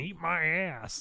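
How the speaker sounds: offhand, tossed-off delivery in a cartoon brat voice. Recounting the rabbit the fairy queen sent, retelling a rabbit yelling. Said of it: "a rabbit yelling".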